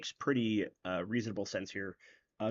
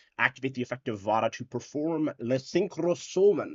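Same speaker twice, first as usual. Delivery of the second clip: bad, clumsy put-on Italian accent; 3 semitones higher, 5 dB louder than usual. A streamer narrating a card game move, in a stupid Italian accent. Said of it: "I said that with a stupid Italian accent".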